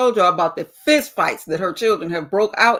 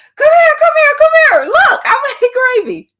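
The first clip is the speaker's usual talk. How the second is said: shrill, swooping, very loud, high excited screaming; 9 dB louder than usual. Retelling calling someone over to see the gravy: retelling own scream. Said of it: "I was screaming".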